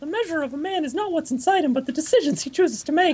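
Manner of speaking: squeaky voice pitched way up high. Reading philosophy aloud to keep sane, in a Mickey Mouse voice. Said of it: "I'll be reading all of the philosophy in Mickey Mouse's voice".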